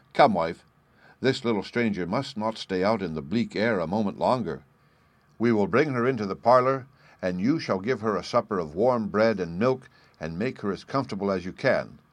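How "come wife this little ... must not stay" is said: ordinary delivery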